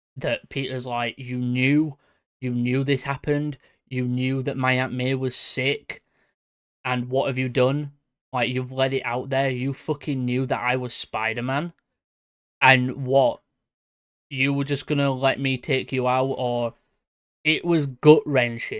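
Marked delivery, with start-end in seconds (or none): none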